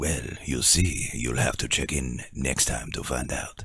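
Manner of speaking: soft, sexy, sultry narrator voice. Asked what happens to Jane, the speaker replies in a sultry, sexy narrator voice. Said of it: "He's sultry and sexy".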